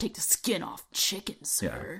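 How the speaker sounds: very menacing, put-on tough voice, swooping pitch. Describing Keanu Reeves acting tough in a role, delivering a mock-menacing Keanu Reeves line. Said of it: "he says very menacingly".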